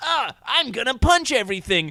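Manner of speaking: high, loud, nasal pinched-nose voice. Mocking how the actor voices Ash, the speaker does a nose-held high-pitched Ash voice. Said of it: "holds their nose and does a high-pitched voice".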